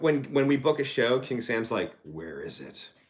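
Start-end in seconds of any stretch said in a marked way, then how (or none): 2.0-2.9 very deep voice, dropped way down low. Retelling what a bandmate asks about a booked show: Clint Eastwood voice. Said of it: "Like in that Clint Eastwood voice".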